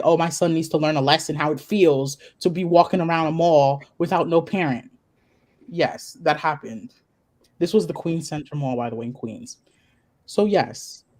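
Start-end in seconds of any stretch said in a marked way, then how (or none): none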